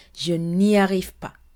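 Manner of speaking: ordinary delivery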